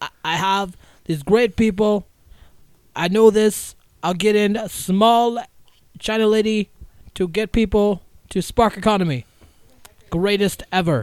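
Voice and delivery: booming, very slow, very drawn-out, clumsy put-on voice. Doing a poor Donald Trump impression about fixing the economy. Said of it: "That was a super poor impression".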